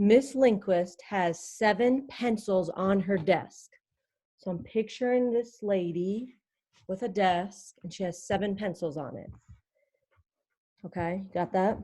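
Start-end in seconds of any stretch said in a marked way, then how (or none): 0.0-3.7 slow, deliberate, unhurried read-aloud. Reading a pencil word problem aloud so listeners can think, reading slowly. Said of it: "I'll read it slow".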